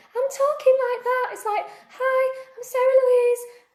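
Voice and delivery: very high, scared-stiff, petrified nervous voice. Recalling her first Facebook Lives, imitating her petrified past self; imitating her petrified high voice. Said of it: "I talked so high because I was petrified".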